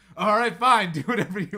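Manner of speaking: acted very loud speech. Retelling a flight attendant's remark to a passenger, imitating someone saying it very loudly. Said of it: "very loudly just like".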